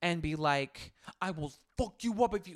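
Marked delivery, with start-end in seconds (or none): 1.2-2.6 put-on menacing mafia boss voice. Acting out a threat nobody actually made: put-on mafia boss voice. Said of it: "like a mafia boss".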